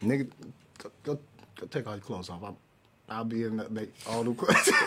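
soft, calm, mellow voice. Retelling an order given without a raised voice: imitating a calm, mellow voice. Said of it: "calm, mellow".

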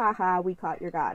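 normal talking voice

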